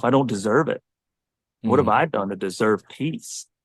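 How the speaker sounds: ordinary talk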